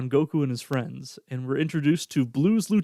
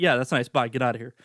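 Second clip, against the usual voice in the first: fake exasperated dismissive tone; 3 semitones lower than usual. Retelling a scene, voicing Bulma brushing someone off: imitating Bulma in don't-give-a-fuck mode. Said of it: "in full, like, "I don't give a fuck" mode".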